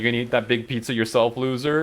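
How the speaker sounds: usual speaking voice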